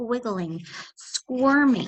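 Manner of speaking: plain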